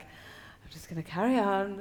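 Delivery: ordinary talk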